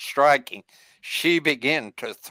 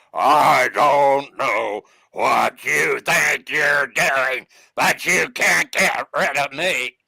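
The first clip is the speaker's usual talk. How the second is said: put-on slow, possessed-girl voice; 3 dB louder than usual. Speaker retelling spirits being cast out of a girl: imitating the voice from her. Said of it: "I'll do the best I can to imitate this voice".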